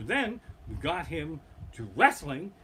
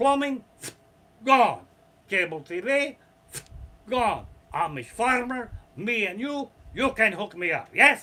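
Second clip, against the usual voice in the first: put-on Russian accent, higher, louder, slower; 5 semitones higher, 7 dB louder than usual. Retelling a story, the speaker voices someone in a Russian accent. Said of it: "that story wouldn't be nearly as funny without the Russian accent".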